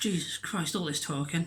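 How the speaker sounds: softly gasped, winded, out of breath.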